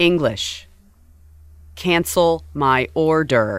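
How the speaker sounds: very slow, mechanical robot-like speech. Imitating a partner talking to an automated phone line, robotic voice. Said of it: "starts sounding like a robot".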